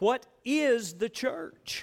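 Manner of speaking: is stressed, slow, with rising intonation.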